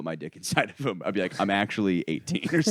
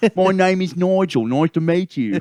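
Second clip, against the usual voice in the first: put-on British accent, higher and louder; 10 semitones higher, 7 dB louder than usual. Showing an old school character who introduces himself: British guy character voice.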